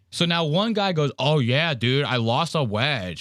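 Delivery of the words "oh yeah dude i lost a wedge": slow, teasing, mocking drawl. Retelling how golfers mocked someone: mocking Ben's voice. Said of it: "making fun of Ben's voice".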